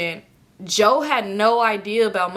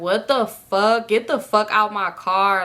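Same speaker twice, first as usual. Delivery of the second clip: mock crying voice. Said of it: "So I'm just crying".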